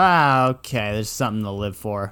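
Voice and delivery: ordinary talk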